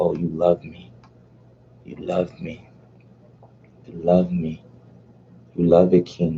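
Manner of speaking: eerie, creepy, hushed half-whisper. Retelling a woman on FaceTime half-whispering to a man: imitating her creepy half-whisper. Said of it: "She starts whispering to him".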